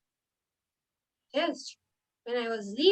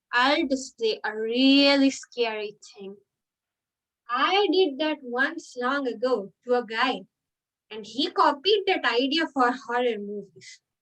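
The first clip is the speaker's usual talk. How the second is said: plain reading voice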